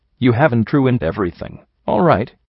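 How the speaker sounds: plain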